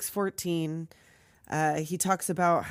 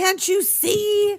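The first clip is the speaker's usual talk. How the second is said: put-on screaming, higher and louder; 9 dB louder than usual. Retelling how a character enters a scene: imitating Walensky screaming. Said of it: "Here he comes screaming".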